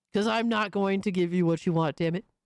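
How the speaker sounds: fast speech in a deliberately deepened voice. Speaker refuses the requested voice and talks in a deliberately deeper voice. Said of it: "I'm purposely making my voice deeper".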